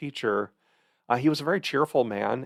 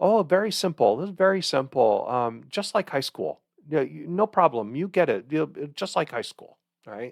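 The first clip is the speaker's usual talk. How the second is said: put-on Taiwanese accent; 4 semitones higher, 3 dB louder than usual. Recalling how a lecturer began each lecture, imitating his Taiwanese accent. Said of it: "in his Taiwan accent".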